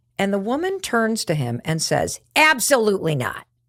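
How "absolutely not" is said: mock, openly hostile tone of voice. Retelling how a woman answered someone offering help, imitating a hostile retort. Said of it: "It was so hostile".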